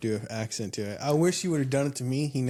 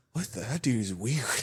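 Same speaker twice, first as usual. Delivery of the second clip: put-on amazed and bemused reaction. Retelling a coworker's reaction to a strange greeting: imitating Teddy amazed and bemused. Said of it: "amazed and bemused".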